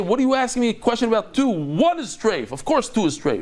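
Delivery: put-on very angry man. You act out how he would answer a question about two, imitating someone very mad. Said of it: "He would be very mad and he would say".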